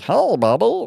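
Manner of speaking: character voice pitched way up. Retelling how the car character Nostradamus greeted the son: Meatwad voice. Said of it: "I used that sort of meatwad voice".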